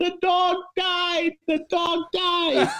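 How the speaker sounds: play-acted, very high, slow, drawn-out scream. Retelling how a woman reacted when asked about her dog, imitating her screaming. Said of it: "And she's screaming".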